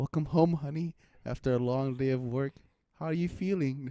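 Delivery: poorly faked, unconvincing put-on female voice. Asked for a little sample, the speaker puts on a bad female voice. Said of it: "That's such a bad female voice".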